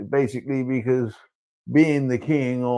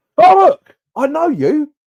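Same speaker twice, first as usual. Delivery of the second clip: much higher, louder, surprised voice. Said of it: "You go, uh".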